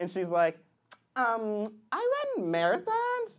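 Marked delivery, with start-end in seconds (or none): 1.2-3.4 put-on swooping, sing-song girlish voice.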